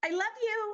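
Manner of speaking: tiny, very high-pitched little voice. Recalling how she used to say it: imitating Norma's high-pitched voice. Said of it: "her little high-pitched".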